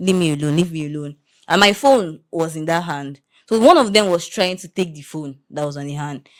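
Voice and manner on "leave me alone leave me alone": normal talking voice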